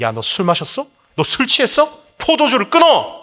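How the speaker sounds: humiliating, scolding rebuking tone.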